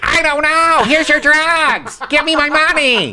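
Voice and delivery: shrill, very high, loud character voice. Playing a drug dealer for laughs: Eddie Deezen impression. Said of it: "it's the best impression I do".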